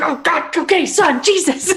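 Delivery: high, loud, exasperated game character voice.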